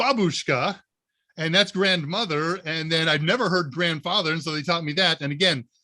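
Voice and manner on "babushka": babushka stressed on its first syllable BA. Recalling being taught the word for grandmother, stress on ba in babushka. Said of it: "You do not put the emphasis on the second syllable. It's always on the first".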